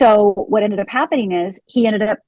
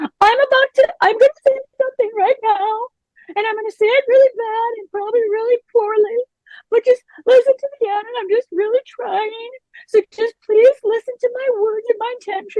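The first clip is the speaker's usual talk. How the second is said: tearful, crying, very high pleading voice; 13 semitones higher than usual. Retelling own past words said while crying and shaking: imitating own tearful plea. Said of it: "And I was crying the whole time".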